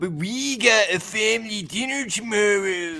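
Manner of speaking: put-on very slow, high, drawn-out New Zealand accent. Correcting a co-host's imitation of a woman, in a New Zealand accent. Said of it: "more New Zealand".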